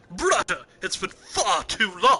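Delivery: very loud, booming character voice, pitch swinging wide. Playing a game and voicing a character in sunglasses, doing a Liquid Snake impression. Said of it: "I kind of want to do a liquid snake impression".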